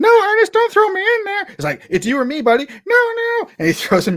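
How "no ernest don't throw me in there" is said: very high, squeaky talking-doll voice. Retelling a scene where Ernest is about to throw a doll: voice of the doll. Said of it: "in the voice of the doll".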